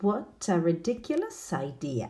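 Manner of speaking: ordinary talk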